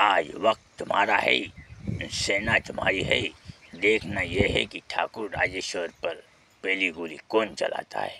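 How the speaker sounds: very soft, hushed put-on movie hero voice. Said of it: "पहिले एक आवाज काढतो राजकुमारचा".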